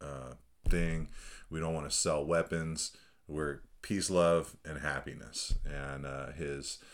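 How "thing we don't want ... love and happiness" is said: ordinary talk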